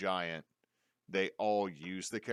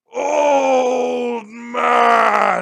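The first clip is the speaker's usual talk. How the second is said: very loud, very high, rough, cracking bellow; 21 dB louder than usual. Voicing a creature that calls out to an old man: bellowing voice like cracking ice. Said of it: "bellows in a voice that sounds like the cracking of ice".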